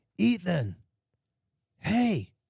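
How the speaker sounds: put-on annoyed yell, ragged, high and scratchy. Retelling a prank where she calls up the dark stairs: imitating someone yelling. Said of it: "She's yelling at me".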